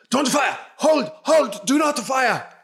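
put-on shrill shouting with Nordic accent. Narrating to players, a voice orders the shooters to stop: Nordic-accented shouting. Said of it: "a more Nordic voice assessing the situation and shouting".

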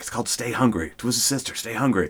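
secretive, quiet, hushed delivery. Retelling a phone call, hand over the phone so mother won't hear, said quietly. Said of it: "And I say it like quietly".

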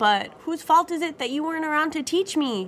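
sweet, gently teasing. A daughter replies to her Papa after his complaint, asked sweetly. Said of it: "I asked sweetly".

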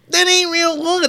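very high put-on feminine voice. Quoting what a woman said, imitating a woman's voice. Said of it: "when he imitates a woman's voice".

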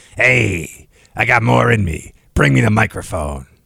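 slow, drawn-out, rough, creaky put-on voice. Joking about retiring late, imitating Larry King. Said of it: "It's my Larry King impression".

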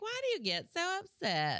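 very high, swooping, sing-song mom voice. Comedian recalling early stand-up, doing her mom as a character: imitating mom voice. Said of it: "like a mom voice".

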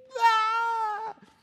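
put-on high, loud toddler scream.

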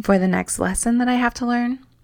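ironic, sneering tone. Looking ahead to the next life lesson to learn: sarcastic. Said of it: "as I say sarcastically".

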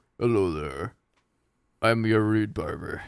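dropped very low. Imagining a TV ad for the ASMR guy you watch, do a very deep Fred's Voice impression. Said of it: "He's got a very deep voice".

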